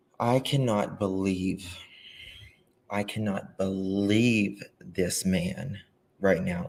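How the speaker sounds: quavering, trembling voice. Starting a live broadcast in disbelief at a man, with a trembling voice. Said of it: "my voice is trembling".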